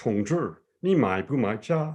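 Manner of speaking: put-on slow Mandarin spoken in a Cork accent. Retelling asking a shop assistant for tea in chinese, cork accent. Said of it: "speak naturally in your best Cork accent".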